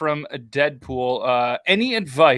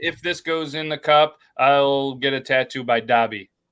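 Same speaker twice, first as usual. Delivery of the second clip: plain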